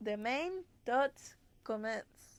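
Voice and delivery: put-on Spanish accent. Trying to pronounce a phrase, say it in a spanish accent. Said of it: "Maybe if I say it in the Spanish accent".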